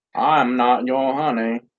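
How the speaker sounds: slow drawl from the US South. Answering being called honey, in a Forrest Gump voice. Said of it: "You sound like Forrest Gump".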